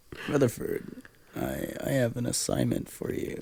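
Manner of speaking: whispered, breathy crime-boss voice. Joking about giving orders to Rutherford: sounds like a mob boss. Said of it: "You sound like a mob boss".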